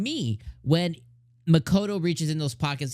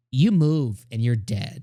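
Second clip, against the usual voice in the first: mock cold, utterly sure, loud, disdainful, menacing; 2 semitones lower, 5 dB louder than usual. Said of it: "it's said with such certainty".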